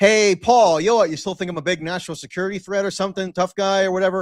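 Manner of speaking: put-on, playful joshing, teasing taunt. Recounting ribbing the man who had reported him, retelling a teasing jab. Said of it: "I kind of joshed him a little bit".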